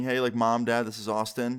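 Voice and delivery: ordinary talk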